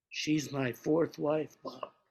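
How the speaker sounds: exaggerated dramatic whisper. Retelling what a man whispered to the speaker: stage whisper. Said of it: "Red whispers to me in a stage whisper".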